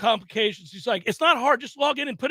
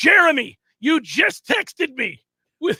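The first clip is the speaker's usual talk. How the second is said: angry voice, louder; 6 dB louder than usual. Retelling talking angrily at a computer screen: imitating own angry words. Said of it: "getting angrier by the second".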